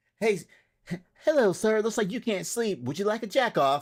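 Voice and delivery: acted robotic sex-bot voice. Acting out the sex robot greeting someone who can't sleep: acting as a sex robot. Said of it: "that's a great sex robot".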